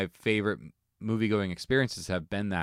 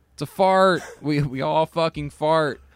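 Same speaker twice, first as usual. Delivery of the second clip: mock scolding, exasperated, high, loud, slow. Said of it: "you'd be like".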